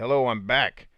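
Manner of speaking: normal talking voice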